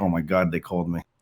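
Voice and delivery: ordinary delivery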